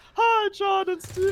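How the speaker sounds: high, loud cartoon frog puppet voice. Speaker greeting John and Steven: Kermit the Frog voice. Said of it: "Hello, Kermit".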